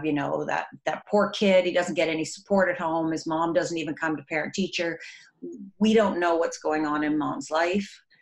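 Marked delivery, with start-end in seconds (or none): none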